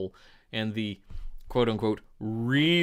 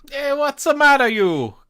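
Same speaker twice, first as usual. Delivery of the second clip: very high, very loud, shrill, booming put-on Italian accent; 10 dB louder than usual. Speaker shows how he would have done the shooting: mock Italian accent. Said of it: "shoot everybody with an Italian accent".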